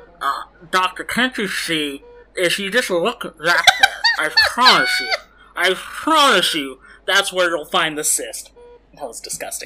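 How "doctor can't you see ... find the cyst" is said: very loud, high, belted voice with big pitch swoops. Voicing a patient with fingers in his mouth: impression of Richard Kind. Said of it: "He was a very good impression".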